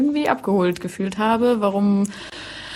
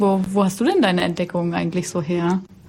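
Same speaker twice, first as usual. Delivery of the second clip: ordinary talk, nothing marked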